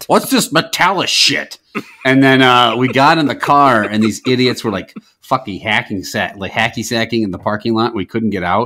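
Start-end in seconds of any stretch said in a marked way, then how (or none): 0.1-1.6 loud outburst, much higher pitch. Retelling grandfather's reaction to hearing about a metallica concert, retelling a loud outburst. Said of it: "real loudly was like".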